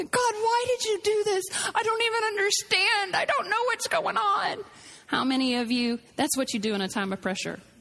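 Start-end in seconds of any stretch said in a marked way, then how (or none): 0.0-4.6 weepy, sobbing, high, tearful crying voice. Showing how people react to pressure: imitating someone crying. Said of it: "and then they cry".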